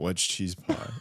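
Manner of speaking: put-on flat, breathy, half-whispered, dead-straight delivery. Retelling a cohost's line from an earlier episode: imitating a deadpan question. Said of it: "You said it so deadpan".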